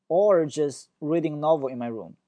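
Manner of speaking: pitch falls at the end, on "room". English list intonation lesson, the last item: falling pitch at room. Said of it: "最后一个语调下降".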